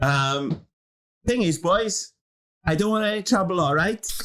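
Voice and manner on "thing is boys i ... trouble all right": put-on Welsh accent, pitched up. Retelling a story, voicing a character's words in a welsh accent. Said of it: "I just thought I'd do it in a Welsh accent".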